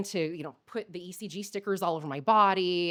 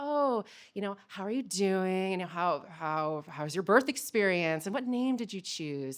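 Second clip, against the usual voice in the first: put-on calm soothing voice, much slower. Speaker retells a woman in the ed talking to her, imitating a really calming voice. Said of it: "in really calming voice".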